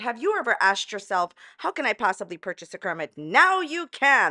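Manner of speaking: put-on TV game show host sales patter. Pitching a Kermit to stream viewers, in a game show host voice. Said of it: "That's my game show host uh, voice".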